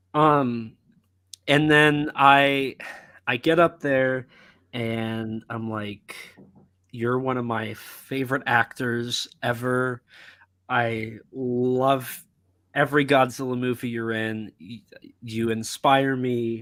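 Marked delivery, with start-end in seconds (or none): none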